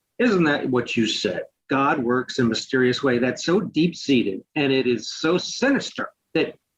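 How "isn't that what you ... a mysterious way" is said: ordinary delivery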